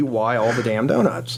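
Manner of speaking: normal talking voice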